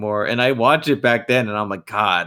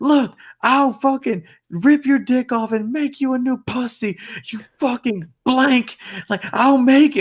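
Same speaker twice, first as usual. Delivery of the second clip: play-acted shrill, furious, enraged rant, very high-pitched; 14 semitones higher than usual. Describing a video where a mom loses it at a man, imitating a furious mom. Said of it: "And like she gets mad".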